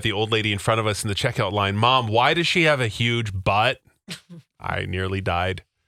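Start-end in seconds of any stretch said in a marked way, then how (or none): none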